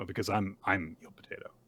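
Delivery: flat, mock deadpan voice. Retelling how a character reveals her secret identity: imitating a deadpan reply. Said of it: "Just deadpan".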